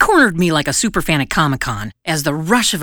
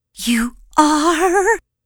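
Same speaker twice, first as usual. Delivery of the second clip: very high coo, word "are" drawn out; 11 semitones higher than usual. Narrator reads the little girl's reply to the storyteller, cooing. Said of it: "she cooed".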